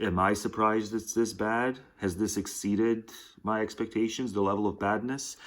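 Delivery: ordinary delivery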